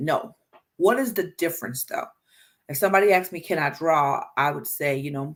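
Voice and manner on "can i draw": ordinary talk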